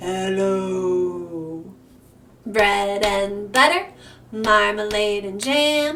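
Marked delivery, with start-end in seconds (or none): 0.0-1.6 deepest possible hello, very low and stretched. In a bread-and-butter rhyme, saying hello as low as possible. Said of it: "Let's say hello as low as we can".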